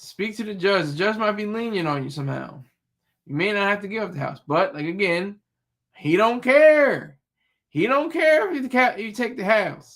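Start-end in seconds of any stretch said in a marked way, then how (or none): 5.9-10.0 put-on rural country accent, higher, drawling, drawn-out. Advising a listener about court, the speaker quotes what a man said, in a country voice. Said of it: "I use a country voice right there".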